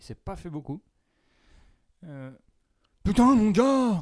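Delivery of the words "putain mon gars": put-on impression, very high, loud and slow. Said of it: "Est-ce que tu peux nous faire une petite imitation, s'il te plaît, de Thomas V D B".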